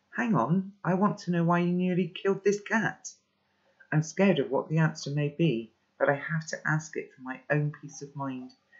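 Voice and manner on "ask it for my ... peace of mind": ordinary delivery, nothing marked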